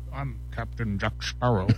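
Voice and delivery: put-on Scottish accent. Prompted with Johnny Depp in an impressions game, doing Captain Jack Sparrow: Sean Connery impersonation. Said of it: "Why do you sound like you're doing a Sean Connery".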